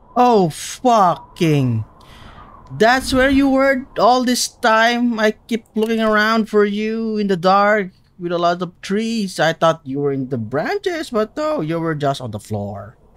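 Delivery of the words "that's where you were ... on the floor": menacing, gloating villain voice, pitched higher. Playing a game and finally finding a lost item, Bane voice. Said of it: "Why did I suddenly sound like".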